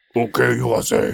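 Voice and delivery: put-on gruff, rough ogre-like voice. Retelling a night out, the speaker quotes the guy leading them in: gruff ogre-like voice. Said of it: "He's like an ogre".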